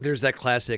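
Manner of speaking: ordinary delivery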